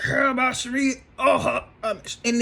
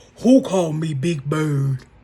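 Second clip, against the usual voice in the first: very deep, low, mocking voice; 8 semitones lower, 3 dB louder than usual. Retelling Portia mocking Angela, in Portia's deep voice. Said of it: "in that deep ass voice".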